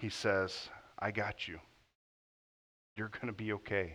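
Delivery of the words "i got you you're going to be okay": soft, gentle voice of a loving father. Speaker voicing Jesus comforting the listener, in a gentle fatherly voice as Jesus. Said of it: "with the gentle voice of a loving father".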